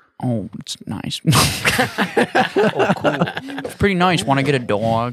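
slow, drawn-out movie-star voice with swooping, wandering pitch. Asked by a friend, doing an Owen Wilson impression on a date. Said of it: "What's the reaction?".

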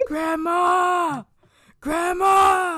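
piercing, shrill, very high, full-volume yell. Telling a story about little Sean calling out after his bath: imitating Sean yelling. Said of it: "He just yells".

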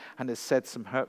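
plain reading voice

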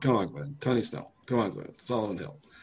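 insistent, argumentative pushback, pressing hard. Retelling how Zach pushed back on a point: imitating Zach pushing back. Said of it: "exactly like Zach said it".

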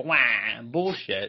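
cartoon character voice, opening with a wah sound. Co-host calling something bullshit on the episode, saying it like Wario. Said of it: "I'm saying it like Wario".

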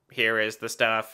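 put-on, low, odd, weird robot voice. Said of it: "a weird voice".

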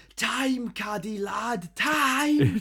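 very high, very slow, drawn-out shout. Retelling a training story where someone shouts at a player: imitating Gravison shouting. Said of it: "Gravison shouts".

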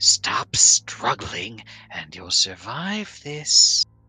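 slow, soft, feminine whisper. Voicing a figure holding a player from behind: whispering feminine voice. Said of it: "A voice, a feminine voice, whispers in your ear".

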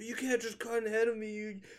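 real anger, very high angry outburst. Retelling how a man from a truck confronted someone cutting ahead, mock-angry. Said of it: "And getting real angry".

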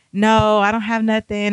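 ordinary talk

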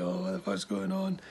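sobbing, tearful crying in a very high voice. Telling a story, quoting a girl crying on the bed, imitating someone crying. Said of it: "crying like".

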